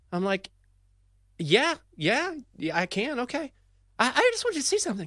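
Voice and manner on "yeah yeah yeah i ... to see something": voice up an octave, excited, breathless rush. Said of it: "voice up an octave".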